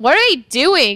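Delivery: loud, high-pitched disgusted groan.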